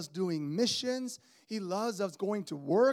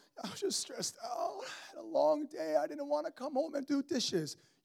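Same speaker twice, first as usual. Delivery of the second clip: high, tearful voice, words broken by crying; 6 semitones higher, 3 dB quieter than usual. Retelling her answer about why she was crying: imitating someone crying. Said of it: "what are you crying about".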